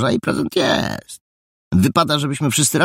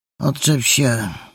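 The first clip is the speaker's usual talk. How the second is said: sleepy, half-asleep mumble; 3 semitones higher than usual. Narrator reading a character being woken up, sleepy mumble. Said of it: "wymamrotał zaspanym głosem".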